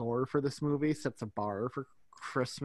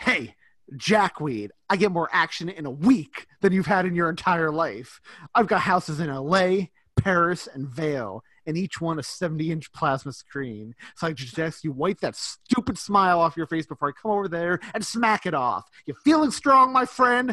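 put-on angry snapping voice, higher and louder; 4 semitones higher, 11 dB louder than usual. Retelling a film scene where Miles snaps at someone: imitating Miles snapping angrily. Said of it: "Miles just snaps at him".

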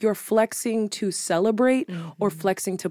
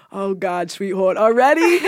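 put-on New York accent, strongly up front; 6 dB louder than usual. Retelling what they say when a friend asks, New York accent. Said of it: "when I talk like this and call them sweetheart".

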